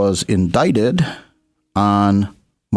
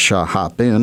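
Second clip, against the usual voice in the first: plain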